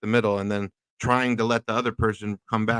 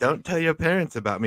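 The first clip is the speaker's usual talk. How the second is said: put-on creepy old man voice, higher pitch; 4 semitones higher than usual. Imitating Kenobi telling young Leia to keep a secret: creepy Kenobi voice. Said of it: "so fucking creepy to have Kenobi say".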